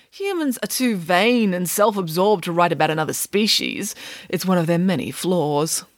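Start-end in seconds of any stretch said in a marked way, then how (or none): none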